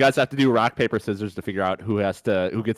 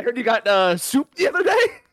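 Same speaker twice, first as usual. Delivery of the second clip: very high, giggly, goofy, laughing through it; 13 semitones higher than usual. Playing a talk-show host asking a guest a stupid question: Jimmy Fallon impression. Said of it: "you just do the Jimmy Fallon".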